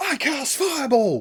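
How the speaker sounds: very high-pitched shout. Acting out a player calling out a spell: imitating someone yelling. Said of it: "some wizard of techno yells out".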